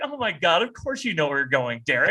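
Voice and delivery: normal talking voice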